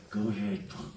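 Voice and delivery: very quiet, soft mutter through the teeth. Explaining how a voice sounds in roles: quiet through-the-teeth Clint Eastwood voice. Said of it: "like that very quiet thing through your teeth".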